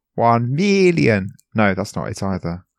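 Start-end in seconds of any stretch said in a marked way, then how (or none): 0.2-1.3 put-on villain voice. The speaker tries again to do the villain's voice, a Doctor Evil impression attempt. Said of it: "What was his voice?".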